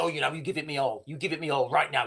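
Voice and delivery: mock aggressive, pushy, in-your-face tone. Retelling how people demand money abroad: imitating someone aggressive. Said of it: "they're very aggressive".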